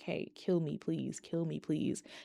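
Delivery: mock hopeless, despairing whisper. Retelling what a character begged in a show: imitating a despairing plea. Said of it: "the despair and the, the want to not be here anymore in her voice".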